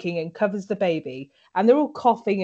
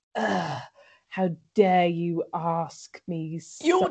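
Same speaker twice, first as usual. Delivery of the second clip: very slow, drawn-out, disdainful shade; 3 semitones lower than usual. Retelling how a character reacts when asked to do something: imitating Jenny's shade-throwing disdain. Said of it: "She's trying to make shade".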